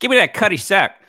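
very high-pitched put-on voice. Joking about how a drink's name is said: Joe Pesci voice. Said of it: "maybe they just say it in a Joe Pesci voice".

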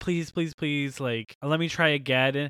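put-on begging, pleading voice. Recounting a story in which a girl without money begs another girl, imitating her begging. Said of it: "she begs her and begs her".

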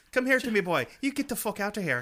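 put-on loud, high, stock leprechaun-style Irish accent. Retelling an Irish man's words to him: Lucky Charms leprechaun voice. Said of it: "he didn't talk like the Lucky Charms".

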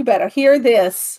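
yelling, hollering. Yelling so a sleeping listener who asked for this will hear it. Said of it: "He's asleep and I'm yelling".

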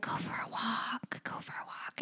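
slow, drawn-out, very soft breathy whisper. Retelling a film scene where a character hears a voice: imitating a whisper. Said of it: "He hears a whisper saying".

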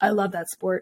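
really deep put-on voice, dropped to bottom. Speaker retells rugby players answering her about synchronized swimming, in a really deep voice. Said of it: "in this like really deep voice".

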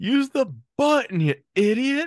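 shrill, piercing, very high scream at full volume. Retelling a sitcom scene where a character screams back: retelling a scream. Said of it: "you hear J T scream back".

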